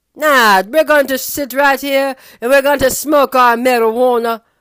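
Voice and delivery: very loud put-on Jamaican Caribbean accent. Voicing the people he blames for his troubles, in a Jamaican or Caribbean accent. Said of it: "That was Jamaican or Caribbean accent".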